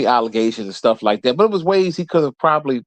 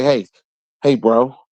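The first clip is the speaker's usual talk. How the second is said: put-on fake-friendly voice, slower pace. Imagining taunting a man just out of jail, mock-friendly Stephen A. impression. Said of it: "I would be facetious and say".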